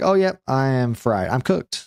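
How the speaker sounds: ordinary talk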